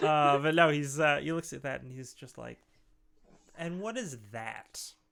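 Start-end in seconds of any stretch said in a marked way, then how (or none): 3.6-4.8 faint, light contempt in the voice. Voicing a character pointing at a holy symbol: disdainful voice. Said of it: "A little bit of disdain in his voice".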